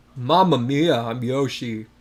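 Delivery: super deep, slow, soothing voice. Joking about how Yoshi could sound: super deep soothing Yoshi voice. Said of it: "Yoshi's voice was super deep and soothing".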